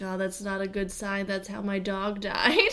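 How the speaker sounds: whispering. Retelling what a movie neighbor said during a scene: imitating someone whispering. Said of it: "Why are you whispering".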